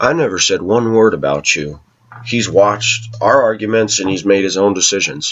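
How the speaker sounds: usual speaking voice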